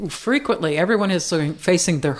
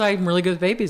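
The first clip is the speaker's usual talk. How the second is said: normal talking voice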